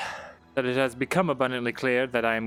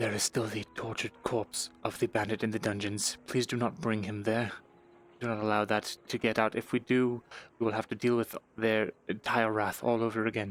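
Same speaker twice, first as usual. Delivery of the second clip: soft, steady half-whisper throughout, no voice; 3 semitones lower, 6 dB quieter than usual. Warning the sergeant in character about the bandit's corpse: half-whispering. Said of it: "He's gonna whisper".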